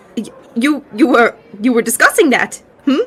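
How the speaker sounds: flustered, nervous stammer, tripping over words. Voicing a blushing character asked about his night: nervous and flustered. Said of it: "blushing, a little nervous".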